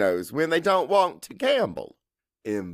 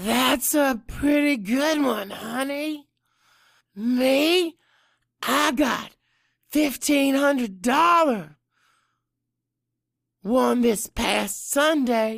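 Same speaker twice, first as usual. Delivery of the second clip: put-on very high, hoarse, raspy old woman voice; 10 semitones higher than usual. Narrator voicing an old woman speaking up at a craps table, raspy old woman voice. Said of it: "A raspy voice says from behind me".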